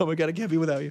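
high, desperate, clingy put-on lion voice. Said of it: "That's my new bit, Codependent Lion".

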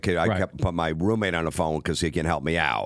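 ordinary delivery

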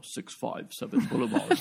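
eerie, creepy, breathy whispered intonation. Imitating how the show says the address: creepy Kylo Ren voice. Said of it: "which they love to say creepily in the show".

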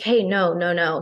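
ordinary delivery

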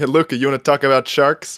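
energetic put-on voice with big energy. Joking about the team owner agreeing with his star: Mark Cuban impression. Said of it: "my Mark Cuban impression".

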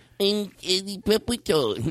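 small, meek little high-pitched voice. Reminding another speaker of a character voice they always do: imitating a meek character voice. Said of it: "it's like a little meek".

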